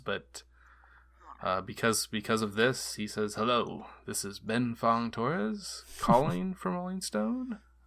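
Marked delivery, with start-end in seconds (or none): 3.3-7.6 long pauses, much higher pitch. Retelling how a caller introduced himself on the phone, with extended pauses. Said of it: "laid out at certain, little like extended pauses".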